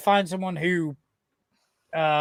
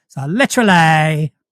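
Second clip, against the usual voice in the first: Essex accent, end of literally stressed, slow, loud. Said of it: "for an Essex accent, all you have to do is lean on the words that end in L Y".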